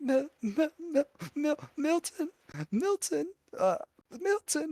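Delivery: very high, frightened, stammering half-whisper. Narrating a scene, the speaker voices a frightened woman trying to call out; scared stammering half-whisper. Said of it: "it's still like just barely a whisper".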